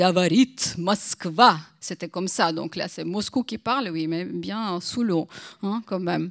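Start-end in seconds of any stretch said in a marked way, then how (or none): 0.0-1.6 put-on solemn announcer voice with much pathos. Recalling Soviet Union days, Moscow speaking, solemn Levitan voice with pathos. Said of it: "avec beaucoup de pathos".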